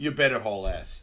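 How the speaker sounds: usual speaking voice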